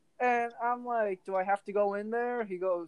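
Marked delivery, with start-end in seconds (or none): none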